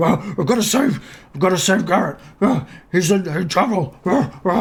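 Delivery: panting, exhausted dog voice. A dog character who has traveled a solid day to save someone: puffed-out, exhausted dog voice. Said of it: "He's all uh, puffed".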